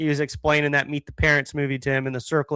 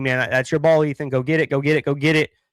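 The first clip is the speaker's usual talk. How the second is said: ordinary talk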